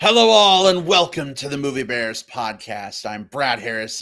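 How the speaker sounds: loud, snarling, snarly voice. Opening a podcast episode in Halloween costume: snarly voice. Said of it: "I don't normally talk with a snarly voice like that".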